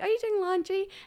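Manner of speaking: put-on tiny, very high, cute toddler voice. Speaker retelling a two-year-old's question during laundry, cute little toddler voice. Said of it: "just the cutest little voice".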